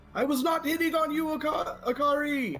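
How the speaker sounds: yelling out in a put-on character voice. Casting a spell in a game and yelling at akari: yelling out in character. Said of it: "I'm gonna yell out".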